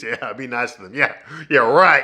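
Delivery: unrealistic, cartoon-villain sarcastic tone. Retelling a movie scene where the husband agrees: sarcastic Daryl impression. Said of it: "Daryl sarcastically agrees".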